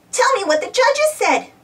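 very high, eager, excited squeaky voice. Dizzy, while Bob just smiles, squeaking excitedly. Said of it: "Dizzy squeaked excitedly".

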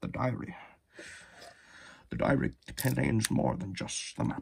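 terrible, rough, raspy movie-star voice. Showing a Lego diary piece: terrible Sean Connery impression. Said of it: "my terrible Sean Connery impression".

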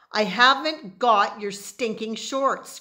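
shrieking, full-on scream. Pinned down in a fight, one fighter screams back at the other, screaming. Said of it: "screamed Omri".

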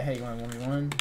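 normal talking voice

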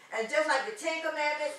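ordinary talk

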